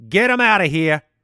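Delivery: loud voice, slight New York accent. Reading an ad for a debit card with no fees, slight New York accent. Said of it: "That was a little bit of a New York accent".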